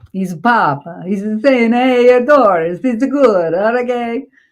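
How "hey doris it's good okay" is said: terrible put-on Italian accent. Voicing the Pope giving a blessing to Doris, in a terrible Italian accent. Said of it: "It's a terrible Italian accent".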